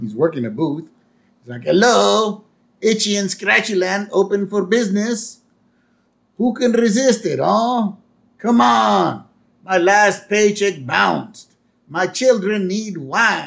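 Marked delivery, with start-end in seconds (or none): 1.6-13.5 put-on French accent, loud, drawn-out barker voice. Retelling a scene, the speaker voices a park booth worker in a french accent. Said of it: "somebody with a French accent".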